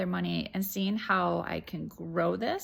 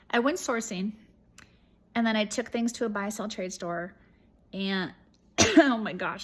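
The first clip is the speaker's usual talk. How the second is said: tearful, choked-up, halting, catching mid-phrase. Updating viewers on a reselling project: choked up. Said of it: "I'm so choked up".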